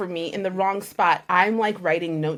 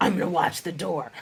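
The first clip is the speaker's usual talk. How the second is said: put-on unfriendly, mean girl voice; 3 semitones lower, 4 dB quieter than usual. Retelling what a girl with a mean face said: imitating a mean-sounding girl. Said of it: "she did not sound like that at all".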